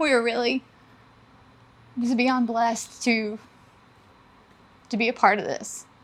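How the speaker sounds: teary, breaking voice. Speaking about their home and community, about to cry. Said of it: "I'm gonna cry".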